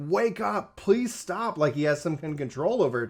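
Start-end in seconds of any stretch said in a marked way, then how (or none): 0.0-1.6 mock screaming, high and drawn out, yelled. Retelling a scene where he screams at Ifrit: imitating someone screaming. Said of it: "he's screaming at Ifrit".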